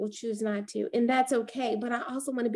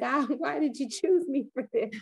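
mock bawling, sobbing, crying out through tears; 3 semitones higher than usual. Retelling her own moments of weakness, imitating her own crying. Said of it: "bawling out, crying, saying".

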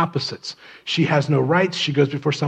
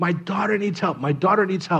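mock woman's scream, higher pitch; 4 semitones higher, 3 dB quieter than usual. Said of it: "she's screaming".

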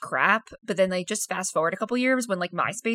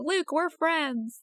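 clumsy, bad Southern accent, pitched up; 8 semitones higher than usual. Retelling a movie bar scene, quoting a character: attempted Southern accent. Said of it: "I can't do a Southern accent, so that's me being like, that's my attempt".

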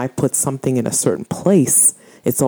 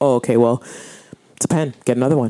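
acted casual, offhand, can't-be-bothered nonchalant tone. Retelling how the other speaker brushed off a lost pen: imitating a nonchalant tone. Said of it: "you were just, like, nonchalant".

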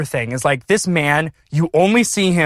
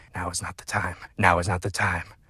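very low, rough, gravelly half-whisper; 9 semitones lower, 9 dB quieter than usual. Retelling a voice half-whispering from beneath the risers: imitating a rough gravelly half-whisper. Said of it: "a rough, gravelly voice whispering".

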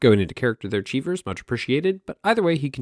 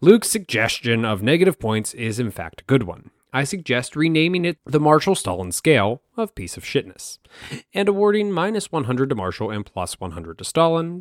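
ordinary delivery

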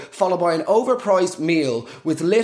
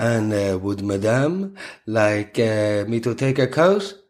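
put-on French accent, very low and slow; 8 semitones lower than usual. Quoting a restaurant waiter on Valentine's Day, in a fake French waiter accent. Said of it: "put on French accents".

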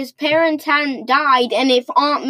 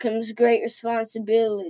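put-on soft old man voice; 3 semitones lower, 5 dB quieter than usual. Redoing a famous quote, trying to make it sound like an old guy: old man voice. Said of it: "because you're trying to be an old man".

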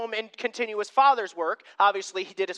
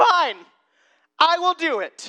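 slow, raised, mock-grudging sarcastic tone; 6 semitones higher, 5 dB louder than usual. Retelling a reluctant reply to a teacher's order: imitating sarcastic Peter. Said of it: "I can almost hear the sarcasm in Peter's voice".

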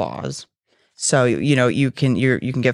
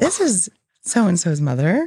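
polite telephone voice, much higher pitch; 6 semitones higher than usual. Imitating a mother talking to the speaker on the phone, mom's phone voice. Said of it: "normal voice on the phone".

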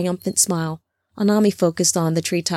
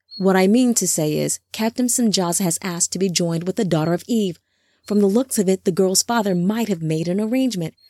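ordinary delivery

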